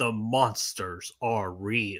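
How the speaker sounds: slow, hushed nineties movie-trailer announcer voice. Praising the classic nineties voice guy, the speaker does him: nineties trailer voice-guy impression. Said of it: "classic voice guy back in the nineties".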